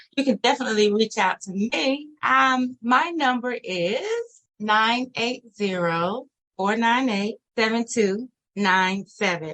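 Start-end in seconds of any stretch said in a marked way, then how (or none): 4.6-9.6 said slowly, unhurried. Giving listeners a phone number to reach out, saying it slowly. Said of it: "I'm saying it slow".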